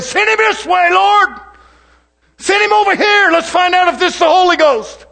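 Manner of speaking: put-on teasing tone. A preacher tells the brethren how he prayed back then, mockingly retelling his prayer. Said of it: "I'm mocking a little bit".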